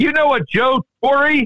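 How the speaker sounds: very shrill, loud, very high New York holler. Retelling a parking lot attendant yelling to another attendant far away, loud New York voice. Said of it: "yells in that loud New York voice".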